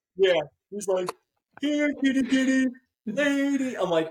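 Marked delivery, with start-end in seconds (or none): 1.6-3.8 put-on amped-up child hollering, very high and drawn out. Retelling how a son yelled back at a neighbor: imitating a kid yelling louder. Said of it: "he just amps it up".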